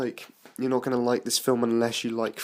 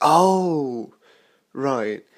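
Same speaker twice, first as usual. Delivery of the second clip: loud, high mock realization. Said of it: "And then everyone goes".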